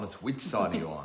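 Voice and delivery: which hit hard, the rest low and soft. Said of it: "It's not whose side are you on".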